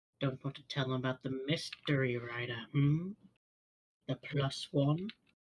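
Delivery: put-on goblin voice. Casting message and mimicking the goblin's voice to mask it. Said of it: "in his voice".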